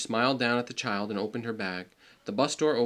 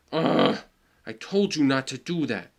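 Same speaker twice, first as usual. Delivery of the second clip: loud, slow, deliberate angry reproachful tone; 3 semitones higher, 5 dB louder than usual. Reading a story aloud, Julian scolds his mother: angry. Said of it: "Julian said angrily".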